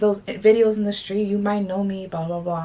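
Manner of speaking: ordinary talk, nothing marked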